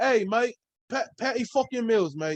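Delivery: put-on, fake Australian accent. Naming an Australian player after forgetting his name: put-on Australian accent. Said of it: "Why do I have to curse when I do an accent?".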